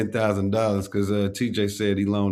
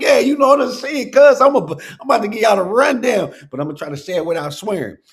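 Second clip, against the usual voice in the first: very high, loud, fully transformed voice; 13 semitones higher, 8 dB louder than usual. Retelling how someone spoke once his voice changed: imitating his changed voice. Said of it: "His whole voice changed".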